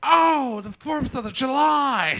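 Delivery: very high, loud, drawn-out voice. Doing a voice for a guess-who game: Jennifer Coolidge impression. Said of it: "It was Jennifer Coolidge".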